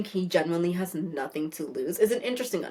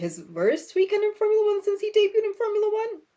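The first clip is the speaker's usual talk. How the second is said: very high, rising pitch, voice shooting up; 3 dB louder than usual. Talking about a formula one driver's weekend, voice going so high. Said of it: "my voice went so high".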